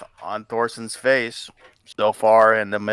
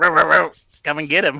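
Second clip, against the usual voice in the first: high, dog-like barked words; 5 semitones higher than usual. A game narrator voices a figure who smiles and starts barking like a dog. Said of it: "starts barking like".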